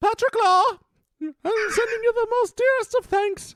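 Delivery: very high-pitched, regal English tones. Asked for an English accent, the speaker thanks a listener in a Queen Elizabeth impression. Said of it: "let's get some Queen Elizabeth if we can".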